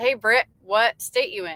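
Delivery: normal talking voice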